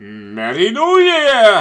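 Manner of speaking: very loud, swooping, big belted delivery. Wishing everyone a happy new year, then an Eddie Murphy impression. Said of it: "in the words of Eddie Murphy ... that's enough of the impersonations".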